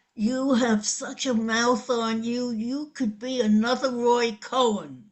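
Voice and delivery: ordinary talk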